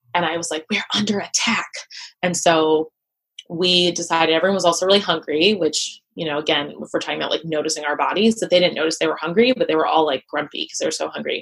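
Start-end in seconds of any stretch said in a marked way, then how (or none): 0.8-1.7 put-on whisper, much higher pitch. Recalling an anxious room, the speaker repeats what they told everyone: retelling a whisper. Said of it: "And I'm like whispering".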